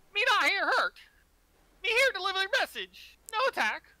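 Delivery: very high-pitched, loud, squeaky calling out. Game master voices something speaking from the center pillar, loud, squeaky voice. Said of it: "this kind of loud, squeaky voice".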